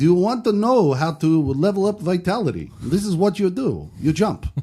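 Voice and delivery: heavy put-on Russian accent. Retelling a video tutorial by a Russian man to friends, in a thick Russian accent. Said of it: "a Russian guy with a thick Russian accent".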